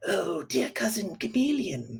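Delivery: high, sibilant, hissing snake voice. A narrator reads the scheming snake greeting Chameleon, in a hissing snake voice. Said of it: "the snake hissed".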